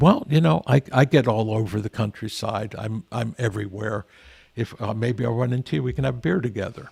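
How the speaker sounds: plain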